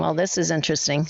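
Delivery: ordinary talk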